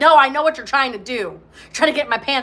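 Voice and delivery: mock guarded, defensive tone. Acting out a listener's imagined reply to a sincere admirer: imitating a defensive refusal.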